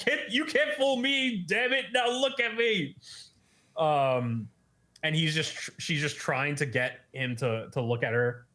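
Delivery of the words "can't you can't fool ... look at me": high, squeaky, put-on exasperated girl voice. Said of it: "And she's like".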